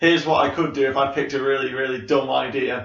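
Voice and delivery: normal talking voice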